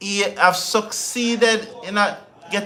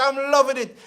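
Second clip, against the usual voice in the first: words bubbling over with laughter throughout; 5 semitones higher than usual. Commentating on an exciting match, laughing while talking. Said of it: "You will hear the laughter in my voice".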